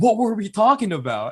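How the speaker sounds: high mock confused voice, pitched way up, lost-sounding.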